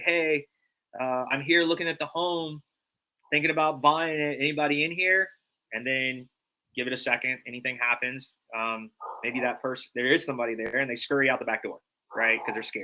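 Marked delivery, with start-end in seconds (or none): 0.0-5.3 calling out loud and clear. Showing how to announce yourself on entering an empty home: loud call. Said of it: "very loudly say".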